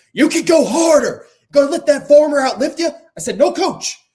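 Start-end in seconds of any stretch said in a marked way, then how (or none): 0.1-2.8 screaming, very high and at full volume. Retelling a workout where the coach screamed at them, imitating Coach Mick screaming. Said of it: "Coach Mick sitting there screaming at you".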